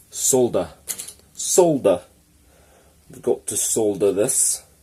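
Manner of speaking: bad put-on English accent with abrupt L. Showing how English people pronounce words, in a really cruddy English accent. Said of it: "that's my really cruddy English accent".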